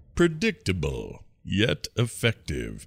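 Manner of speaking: swooping, animated character voice, pitch going up and down. Asked to perform an answer in his voice, Zapp Brannigan voice. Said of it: "So I have to perform it in his voice?".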